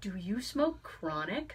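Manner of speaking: very quiet, hushed whisper. Retelling how a woman leaned in and asked a question: imitating someone whispering. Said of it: "leans in and whispers to me".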